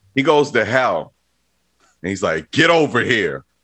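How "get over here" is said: put-on most American possible, thickly laid-on American accent. Retelling a movie scene, Scorpion in a very American accent. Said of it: "in the most American accent you could possibly ever have".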